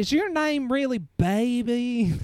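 over-the-top fake Southern drawl, very high, slow. Imitating an actress's fake southern accent in the movie: imitating a fake southern accent. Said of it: "the fake Southern accents".

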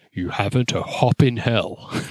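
big, grand movie-trailer announcer voice. Podcast host reading out a tagline for the movie, big voice. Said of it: "put on my big voice".

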